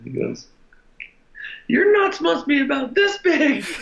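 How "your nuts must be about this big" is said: squeaky put-on voice, much higher. Retelling what a man said to a struggling pitcher, imitating a high-pitched voice. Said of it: "his high-pitched voice".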